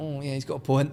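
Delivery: ordinary delivery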